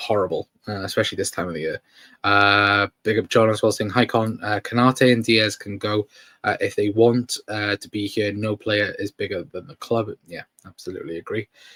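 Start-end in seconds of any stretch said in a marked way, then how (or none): none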